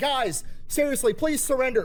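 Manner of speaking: mock well-mannered, overly polite, earnest pleading. Acting out a soldier politely asking enemies to surrender: imitating a polite plea. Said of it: "polite homeschool kid Terminator".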